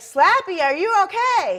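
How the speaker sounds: shrill, booming, very high, loud, drawn-out yell. Retelling how someone yelled out to them: imitating someone yelling out. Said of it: "he yells out".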